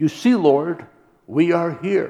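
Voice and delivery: put-on, loud, high-pitched cry at full voice. Telling a story, quoting a man crying out to the Lord: retelling a loud cry. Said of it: "cry at the top of his voice".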